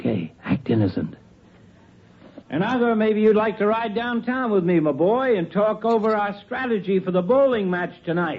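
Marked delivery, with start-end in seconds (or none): 2.5-8.4 talking at a full, high, raised shout. A doctor, acting innocent, talks to a boy as a woman arrives: shouting. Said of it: "Who are you shouting at?".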